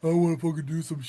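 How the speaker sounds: mocking put-on character voice. Mocking a friend's father while talking about him: Nuke voice mocking Dally's dad. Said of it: "I'm making a Nuke voice while mocking fucking Dally's dad".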